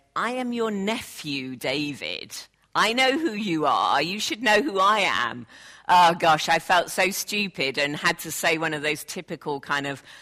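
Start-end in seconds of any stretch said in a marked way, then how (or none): 0.2-5.5 mock disbelieving, incredulous tone. Retelling what her nephew said when she failed to recognize him, retelling a disbelieving reply. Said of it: "looked at me in disbelief and said".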